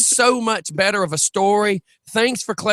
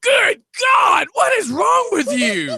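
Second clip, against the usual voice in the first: play-acted, very high, hollering shouted yell; 13 semitones higher than usual. Telling about a man at the computer, retelling him yelling over the band. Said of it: "and he just yells over the band".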